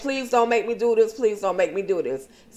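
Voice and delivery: put-on fast, rushed begging over and over. Recapping a story scene, voicing a character ordered to kill someone: acting out begging. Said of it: "Brian is begging and pleading".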